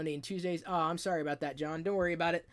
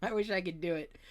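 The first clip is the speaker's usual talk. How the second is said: ordinary delivery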